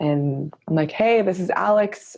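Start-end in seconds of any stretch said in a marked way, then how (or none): 0.9-2.2 easy, slow, really friendly, buddy-like tone. Showing how a voicemail opening sounds: imitating own really friendly tone. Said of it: "I do it in a really friendly tone".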